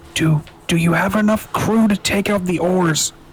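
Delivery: shouted, loud whisper. A player's character calls to the captain aboard a ship, whisper-yelling. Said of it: "Avery will whisper yell to Captain".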